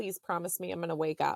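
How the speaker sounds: ordinary talk, nothing marked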